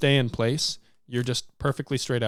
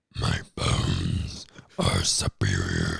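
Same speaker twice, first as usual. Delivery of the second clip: very low, deep, creaky, rough dragon rumble. Trying out voice acting on a recording: deep dragon voice. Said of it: "I sound like a dragon".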